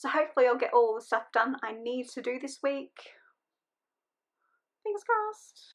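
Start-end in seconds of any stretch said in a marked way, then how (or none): 4.8-5.7 very high, pitched-up chatter. Speaking to viewers about the week ahead, in a high-pitched voice. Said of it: "I don't know why I'm talking in a high-pitched voice".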